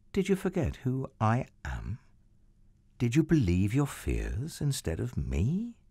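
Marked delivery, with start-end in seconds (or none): none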